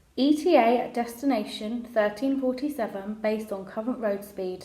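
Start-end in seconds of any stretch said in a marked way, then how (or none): none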